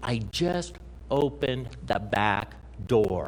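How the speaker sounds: slowed, stressed, deliberate emphasis on "just".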